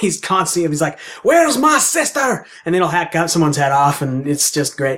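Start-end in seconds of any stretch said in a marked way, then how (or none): 1.2-2.4 put-on very high, furious, angry Scottish accent. Describing a video game's ancient knight hero, speaker quotes him in a put-on angry Scottish accent. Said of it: "he speaks in this angry Scottish accent".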